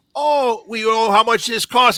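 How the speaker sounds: put-on thick Minnesota accent. Quoting a woman, in a big minnesota accent. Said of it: "they had the big Minnesota accents".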